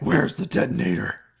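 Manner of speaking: rough, hard, growly superhero voice. Commentary track hosts watching a film, in a Batman voice. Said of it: "Batman's voice".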